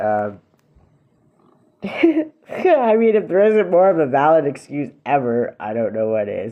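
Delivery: words broken up by laughter. Speaker recounting a late-rent situation, laughing while talking. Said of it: "sorry, I'm laughing because".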